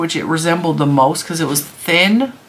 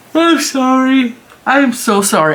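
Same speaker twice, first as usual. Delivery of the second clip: very slow, high, drawn-out, mid-yawn voice; 7 semitones higher, 4 dB louder than usual. Speaker, tired all the time and unable to stay asleep, talks to listeners while yawning. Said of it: "I hate that I'm yawning so much".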